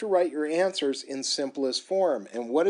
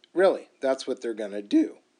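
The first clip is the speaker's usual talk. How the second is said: voice cracks, lower; 4 semitones lower than usual. Explaining the six trig functions, voice cracking. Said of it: "Oh, my voice cracked".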